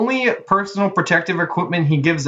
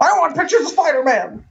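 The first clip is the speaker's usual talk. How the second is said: very high, shrill put-on shout; 10 semitones higher than usual. Quoting a movie line while yelling alone to friends: imitating someone yelling. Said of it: "I'm just yelling in my room".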